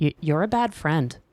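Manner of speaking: soft, sad delivery. Retelling a scene where Scorpia answers Catra: imitating Scorpia quietly and sadly. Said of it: "quietly and sadly, but strongly".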